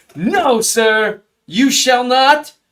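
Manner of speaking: put-on loud, drawn-out British accent. Imitating a pass blocker politely refusing: british accent. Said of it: "He plays with a British accent".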